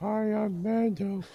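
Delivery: speaking as a dog. Answering a request for the dog to speak: voicing the dog. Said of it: "I can't believe he said that".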